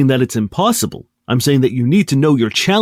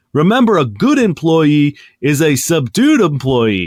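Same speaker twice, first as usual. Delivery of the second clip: loud, booming, amplified, far-carrying proclaiming voice. A player's character, vocal amplifier turned on, addresses the crowd: speaking loudly. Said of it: "I say loudly".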